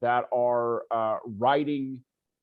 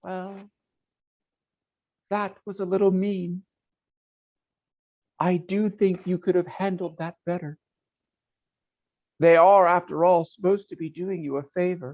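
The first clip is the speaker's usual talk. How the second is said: faint, far-off, high voice, barely there; 6 semitones higher, 3 dB louder than usual. Narrator voicing a voice heard faintly from far behind the listener, faint high voice. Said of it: "you hear the high voice".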